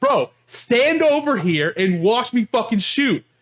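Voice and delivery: heated, high-pitched, drawn-out yelling. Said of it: "screaming at this point about".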